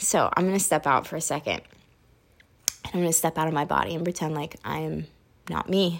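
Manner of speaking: very hushed, quiet, low, holding back tears. Speaker just told how much they'd be valued, holding back tears. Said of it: "I am really trying not to cry right now".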